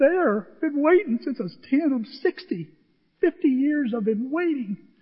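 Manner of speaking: choked up, overcome, pitched high. Recalling finally reaching the stadium after fifty years of waiting, choked up. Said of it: "What's wrong with me?".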